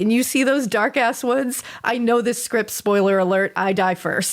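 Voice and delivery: ordinary talk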